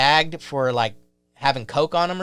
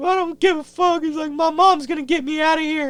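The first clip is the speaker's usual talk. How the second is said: imitated crying voice, higher. Retelling what a crying man said to others: imitating someone crying. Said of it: "so this dude's crying and shit".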